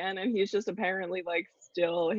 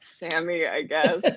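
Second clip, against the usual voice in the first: thoroughly disappointed, deflated tone. Imitating a co-host introducing himself: imitating Sammy sounding disappointed. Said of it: "you sounded so disappointed".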